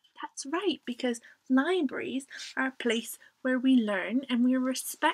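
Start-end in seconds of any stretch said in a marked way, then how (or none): none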